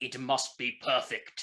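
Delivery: put-on German accent. Retelling what a Manfred von Karma-shaped shoulder devil says: German accent. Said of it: "tells me in a German accent".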